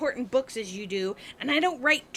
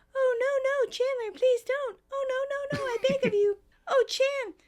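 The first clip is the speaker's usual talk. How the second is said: put-on woman's voice, much higher, slower; 11 semitones higher than usual. Retelling a scene where chandler impersonates a woman, imitating a woman's voice. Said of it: "impersonating the woman's voice".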